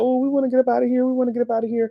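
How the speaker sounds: mock high, whiny, blubbering crying wail. Retelling trapped girls in a trailer begging to leave: imitating crying girls. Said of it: "so they crying".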